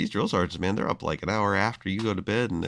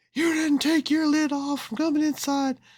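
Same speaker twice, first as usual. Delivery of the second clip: very high-pitched drill sergeant yell; 3 dB louder than usual. Speaker recounts forgetting to remove their cap indoors, imitating the drill sergeant yelling. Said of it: "he's yelling at me".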